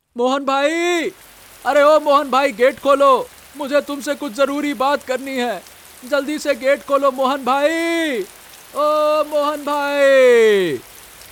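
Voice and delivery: shouting. Calling for Mohan bhai to come and open the gate, shouting. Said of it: "इतना चिल्ला क्यों रहा है?".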